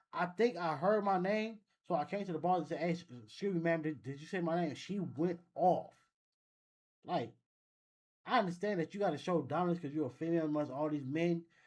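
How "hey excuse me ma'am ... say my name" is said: ordinary talk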